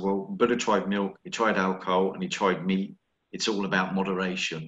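ordinary delivery

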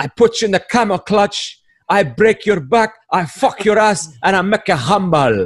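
high wrestler hype voice. Retelling a comedian's joke: Iron Sheik impression. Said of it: "the Iron Sheik always talks about".

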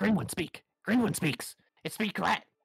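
high, broken rat squeak-talk. Playing two rats that speak to each other in broken, repetitive speech, as talking rats. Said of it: "You can hear the two rats talking to each other. The other three of you, you just hear squeaks. But you can hear one saying to the other".

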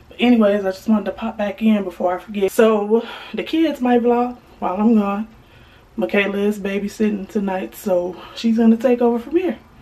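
puffing, catching breath between words, winded. A mom pops back into her vlog after running up and down the stairs: out of breath. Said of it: "I'm out of breath because I just ran".

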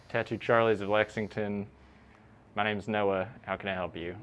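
dull, flat, low voice, no enthusiasm. Practicing how to answer a tattoo shop's phone for clients: flat, unenthusiastic. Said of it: "Maybe some enthusiasm".

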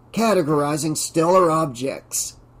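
plain reading voice

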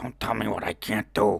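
gravelly, raspy, creaky undead ghoul voice. Told he can't walk from here, the speaker quotes Lost; accidental ghoul voice. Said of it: "wasn't supposed to sound like a ghoul".

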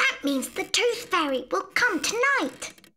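eager, excited, high-pitched exclamation. Aunt Mo speaks to Imelda after her baby tooth falls out, excited. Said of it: "Cried Aunt Mo excitedly".

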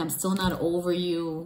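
ordinary delivery

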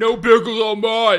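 loud, slow, demanding delivery.

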